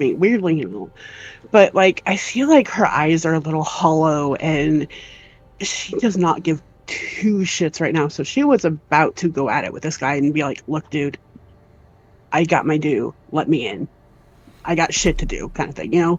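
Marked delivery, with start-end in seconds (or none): 10.7-15.5 dry, unbothered, very deadpan flat tone. Speaker voices a woman about to confront a guy, imitating a deadpan reply. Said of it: "very deadpan".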